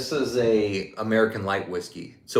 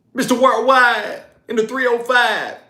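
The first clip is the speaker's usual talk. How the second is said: very high, loud, belted shout; 13 semitones higher, 6 dB louder than usual. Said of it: "that [name] impression was legit".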